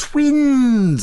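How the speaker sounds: overjoyed, very high, drawn-out delighted cry. A nurse reacts to the narrator's news, exclaiming. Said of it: "exclaimed the nurse".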